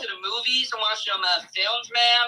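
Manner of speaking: fake American accent, casual delivery. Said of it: "they're doing the accent".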